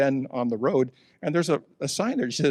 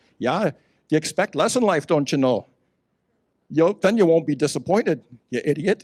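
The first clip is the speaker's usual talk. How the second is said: loud put-on Scandinavian accent, held throughout; 2 semitones higher, 5 dB louder than usual. Repeating a saying they were taught, as it must be said, in a Scandinavian accent. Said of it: "you have to say it with a Scandinavian accent".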